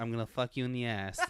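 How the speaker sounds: put-on lisping boxer voice. Quoting a comedy sketch for a friend who may not have seen it, Mike Tyson voice with the lisp. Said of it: "talking like Mike with the lisp and stuff".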